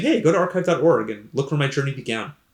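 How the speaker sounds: ordinary delivery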